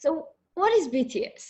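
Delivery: put-on slurring, swooping drunk voice.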